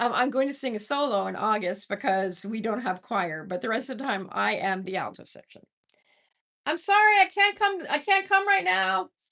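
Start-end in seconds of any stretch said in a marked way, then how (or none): 6.7-9.0 very high, loud, yelled call-out. Calling out to someone knocking at the door: yelling loudly. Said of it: "I didn't mean to yell so loudly".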